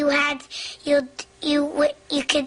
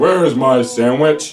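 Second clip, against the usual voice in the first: big, booming bellow at unchecked volume; 14 semitones lower, 8 dB louder than usual. Retelling a ride when a companion with headphones woke up, booming Alan voice. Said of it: "this big, booming Alan voice goes".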